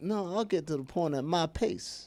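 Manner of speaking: unhurried, slow, easygoing Southern drawl. Showing how the easygoing southern drawl sounds: easygoing southern drawl. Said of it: "the Southern drawl has, like, easy going".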